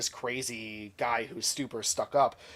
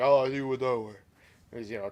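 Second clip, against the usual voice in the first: put-on deep voice, slower. Retelling a man's reply to a woman's question, doing Titus O'Neil's deep voice. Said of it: "Titus got that real deep voice".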